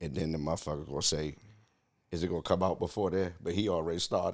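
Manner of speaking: quiet, gentle voice. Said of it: "like, this soft voice".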